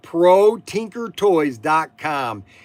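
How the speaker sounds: very slow, deliberate, drawn-out letter-by-letter spelling. A host repeating the shop's web address, said very slowly. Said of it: "Let me say that very slowly".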